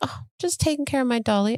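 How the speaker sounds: put-on small, tiny, mousy little-girl voice. A mother retelling her young daughter's reply to her: little mousy voice. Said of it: "she had this little mousy voice".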